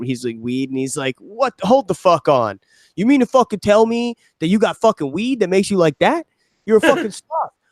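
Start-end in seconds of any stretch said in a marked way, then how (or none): 1.2-7.5 mock furious yelling, high and angry. Retelling a commercial where the dad is mad at his son: imitating someone yelling angrily. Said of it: "yelling at him".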